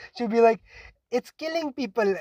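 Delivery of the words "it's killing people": put-on sweet, cute, high-pitched girly little voice. Speaker imitating how a girl answers a question; imitating her girly voice. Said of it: "girly voice".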